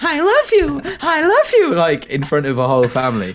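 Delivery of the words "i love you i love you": very high-pitched talking-card voice. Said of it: "it's obviously like".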